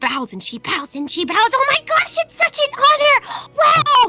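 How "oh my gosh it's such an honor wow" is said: drawn-out gushing awe, very high, loud and excited. Playing a character bowing to a newly recognized dragon: loud excited gushing. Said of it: "Amara, shush".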